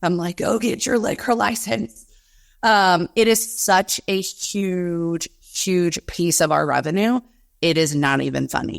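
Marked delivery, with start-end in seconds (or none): 0.4-2.0 mock half-shouted high, mild yell. Retelling yelling at a podcast while in the car: imitating own screaming. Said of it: "screaming in the car".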